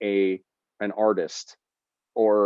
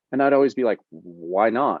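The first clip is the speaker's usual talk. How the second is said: normal talking voice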